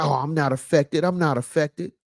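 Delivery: ordinary talk, nothing marked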